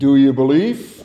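very deep voice, taken way down low. Telling a joke, the speaker voices the reply from above: deep bellowing voice from above. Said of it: "a deep voice bellows from above".

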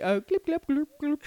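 made-up alien babble, high-pitched gibberish. Joking about an alien chatting at a meeting: alien talk. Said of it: "That's alien talk".

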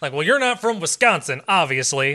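mock Southern accent. Retelling what they said back to Candace, in a Southern accent. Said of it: "I'm doing a Southern accent".

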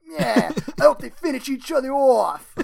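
very loud, rough, gruff gangster growl. Retelling an onlooker's line from a Spider-Man scene, in a gruff gangster voice. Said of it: "a gruff like gangster voice is like".

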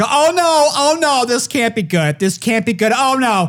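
put-on panicked voice. Retelling a bumpy flight, acting out a frightened passenger behind you, in a put-on panic. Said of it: "like just with her panic".

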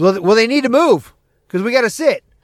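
mock, loud calling out, high and insistent. Retelling saying aloud that people in their seats must move: retelling own loud remark. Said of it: "so I'm saying this shit out, you know, loud".

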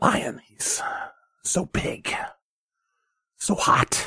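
very slow, low whisper sliding into a growl. Imitating the speaker of the lion speech: impression, low whisper-to-growl voice. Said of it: "impossible to really do a full impression of him".

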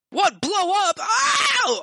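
panicked crowd voices. Voicing crowd members who hear the ship will blow up: freaking out crowd. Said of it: "All the people start kind of freaking out".

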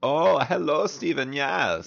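put-on German accent. Starting an improvised scene, the performer greets in their best German accent. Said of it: "You must speak with your best German accent".

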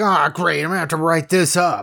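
put-on annoyed, irritated, fed-up, put-upon tone. Retelling how the workers reacted after it was broken: imitating someone pissed off. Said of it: "So pissed off that he's broke it".

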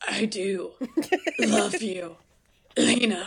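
put-on voice, very slow, halting, long pregnant pauses. Acting out a man sitting on the bed edge, mimicking a voice with long pauses. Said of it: "I'll do your voice. ... with those pauses, these pregnant pauses".

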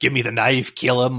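scary, put-on commanding voice. Retelling the mother's scene in the chopper: imitating Jessica using the Voice. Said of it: "when she can start using the voice".

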